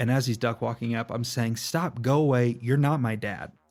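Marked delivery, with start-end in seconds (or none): 1.6-3.5 put-on bratty, stubborn, screaming little-kid voice. Retelling screaming as a little kid at a dad climbing up: imitating own past screaming. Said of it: "I'm screaming this at him".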